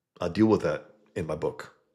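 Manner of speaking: plain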